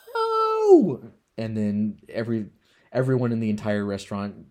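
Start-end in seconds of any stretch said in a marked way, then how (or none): 0.2-1.0 very loud, very high, drawn-out shriek. Retelling a scene where a woman refuses, imitating a scream. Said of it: "Alice screams".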